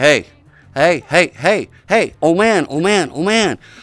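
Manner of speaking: little excited frog voice, drawn out. Telling a joke, voicing the frog getting a little excited. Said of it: "the frog's getting a little excited".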